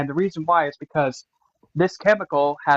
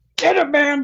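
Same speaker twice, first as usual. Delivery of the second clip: mock furious, very high-pitched, angry voice; 12 semitones higher, 4 dB louder than usual. Acting out Mars picking a fight: angry Mars voice. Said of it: "why are you so mad, bro?".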